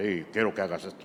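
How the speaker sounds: very low, deep, soft, hushed radio-announcer voice. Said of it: "poniéndole voz de locutor a Dios".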